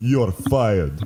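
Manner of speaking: put-on Russian accent. Playing out a planned scene, firing a man covered in grease, russian accent. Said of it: "Russian accent says you're fired?".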